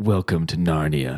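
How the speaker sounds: whispered line. Playing a character who stabs a goblin: whispering in his ear. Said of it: "I whisper in his ear".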